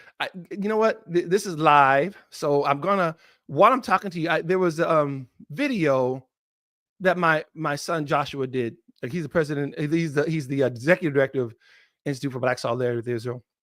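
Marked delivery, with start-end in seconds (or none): 9.8-13.4 fast, rushed, rattled-off talk. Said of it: "I know I'm talking fast".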